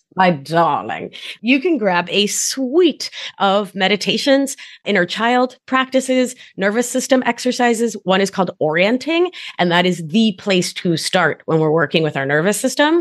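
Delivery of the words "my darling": put-on old-fashioned 1950s-style mid-Atlantic accent. Speaker playfully showing off an accent mid-talk, in a 1950s mid-atlantic accent. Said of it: "Do you like my mid-Atlantic accent from the 50s?".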